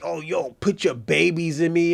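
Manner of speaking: put-on woman's voice. Retelling how a woman talks: imitating Queen Rogue talking dirty. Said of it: "She talks dirty".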